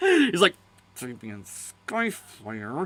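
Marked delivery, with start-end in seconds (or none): 1.0-2.9 put-on mutter through gritted teeth, lower, much quieter. Quoting a man saying damien skyfire's name; mock muttering through gritted teeth. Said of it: "gritting his teeth and saying it under his breath".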